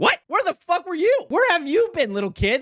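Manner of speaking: high, baffled, demanding tone.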